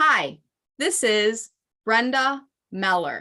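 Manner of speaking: measured, slow, deliberate, unhurried delivery. Demonstrating how to record a name greeting, speaking slowly. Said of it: "You heard how I just did that now".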